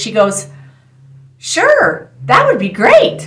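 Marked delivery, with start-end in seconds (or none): 1.4-3.3 put-on sweet angelic girlish lilt, very high pitched. Retelling a woman's reply to an offered ride, in a sweet young girl voice. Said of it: "a very sweet, young girl sounding voice".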